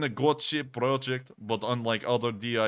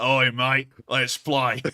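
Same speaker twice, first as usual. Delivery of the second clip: fake Australian accent, louder; 6 dB louder than usual. Voicing a dolphin gadget saying let's play: put-on Australian accent. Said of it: "that's the right accent for it".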